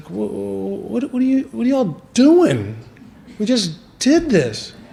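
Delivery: put-on earnest, sympathetic, high, sincerely empathetic tone. Retelling what the one who pulled them over asked: imitating sincere empathy. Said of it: "really sincere empathy. He's like".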